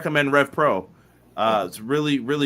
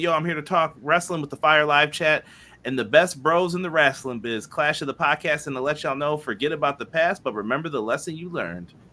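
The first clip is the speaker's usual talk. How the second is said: plain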